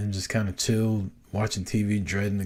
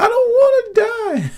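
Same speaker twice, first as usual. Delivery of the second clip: put-on crying little boy voice, higher, louder; 10 dB louder than usual. Retelling a bumpy takeoff, imitating a crying little boy. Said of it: "this little boy behind me starts crying".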